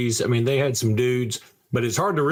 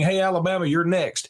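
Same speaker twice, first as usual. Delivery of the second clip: imitated, mocking, very effeminate voice; 6 semitones higher than usual. Quoting a lineman's words, imitating a very effeminate voice. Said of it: "with the very effeminate voice saying".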